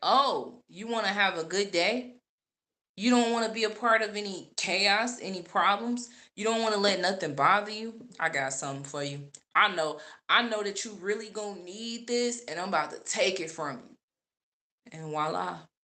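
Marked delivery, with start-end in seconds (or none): 0.0-14.0 put-on devil voice. Retelling a money loss, acting out what the devil said: voicing the devil. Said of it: "The devil was like".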